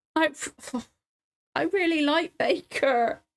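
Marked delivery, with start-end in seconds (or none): 1.5-3.1 high, slow, tearful talking while crying. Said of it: "'cause I'm crying".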